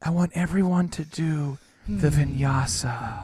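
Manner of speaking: mock whispering instructor voice. Retelling how the lady in a hot yoga class talked: imitating a whispering yoga instructor. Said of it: "Why is she whispering?".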